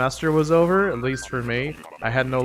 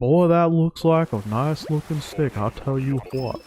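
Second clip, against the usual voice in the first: put-on cartoon dad voice with Texas accent; 2 semitones higher than usual. Asked to just do a line, the speaker tries a Hank Hill voice. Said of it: "Just do a line".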